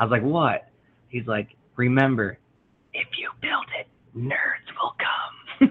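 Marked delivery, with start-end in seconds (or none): 1.8-5.7 soft, hushed, breathy whisper. Father retelling what his son whispered while falling asleep in his tent: retelling a whisper. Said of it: "he's whispering".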